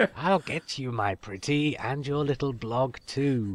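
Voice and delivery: soft, hushed storybook witch voice. Reading a quote from a listener's message aloud, the podcaster uses a Wicked Witch voice. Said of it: "read that last quote in the voice of the Wicked Witch".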